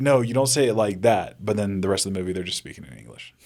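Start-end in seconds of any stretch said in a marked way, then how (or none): none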